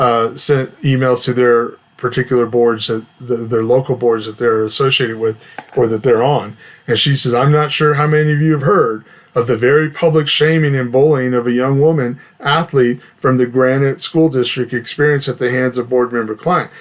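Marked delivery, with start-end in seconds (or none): none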